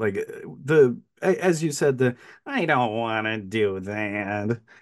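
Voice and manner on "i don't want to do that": drawn out in a cartoonish way. Quoting a film character's line: imitating Pinback's Looney Tunes delivery. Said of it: "a sort of Looney Tunes character delivery".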